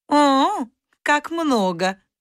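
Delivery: amused, high, spoken through a laugh. Narrator reads the khan's reply to the mice, laughing. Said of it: "засмеялся хан".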